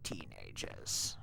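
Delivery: annoyed, thoroughly fed-up, breathy whisper. Quoting a movie character annoyed with the Power Rangers: imitating annoyed Ivan Ooze. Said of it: "he gets annoyed with the Power Rangers and he's like".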